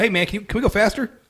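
put-on very high, loud, eager young-sounding voice. Retelling what a young kid asks: imitating an impatient young kid. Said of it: "I got some young kid".

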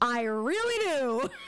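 mock eagerness, said slowly.

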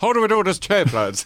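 put-on, high-pitched West of Ireland accent. Imitating a film director planning a cheap shoot: Ron Howard in West of Ireland accent. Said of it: "that sort of West of Ireland thing I did there".

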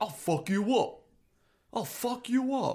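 slow, drawn-out yelling. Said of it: "he's like".

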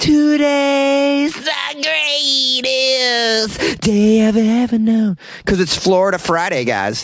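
very high, swooping, drawn-out, "greatest" stretched. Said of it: "my [name] impression".

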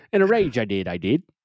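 put-on English accent. Reading out a confession about an argument: put-on english accent. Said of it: "'cause it sounded more English".

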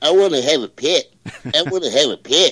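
thin, high, loud cartoon voice. Recalling a cartoon episode scene, doing a weak Meatwad impression. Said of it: "I tried to do him in that episode".

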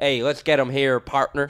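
clumsy, weak, put-on Texas accent. Asked to do a Texas Longhorn accent, giving a bad Texas accent. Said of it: "Let's hear this Texas Longhorn accent".

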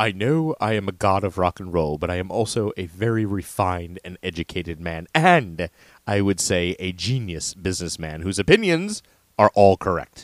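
rock-star voice, as pretentious as possible. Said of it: "the most pretentious person you've ever heard".

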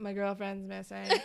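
flat monotone, put-on. Recapping a show, imitating a character in a monotone voice. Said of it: "back with Monotone Boy".

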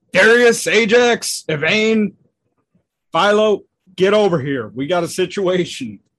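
loud, high-pitched yelling. Playing a character taking cover behind a wall: yelling for help. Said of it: "start yelling".

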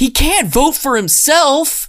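very high-pitched, shrill yell. Recounting each version one by one, acting out the son's line, imitating someone yelling. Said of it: "the son yelling".

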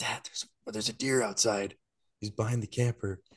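soft, hushed, urgent tone.

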